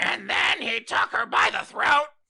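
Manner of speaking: shrill, loud, raspy, high-pitched screech. Joking about Gilbert Gottfried reading Fifty Shades: Gilbert Gottfried impression. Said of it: "Not your worst impression".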